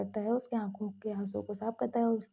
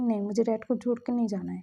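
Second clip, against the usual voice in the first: ordinary talk, nothing marked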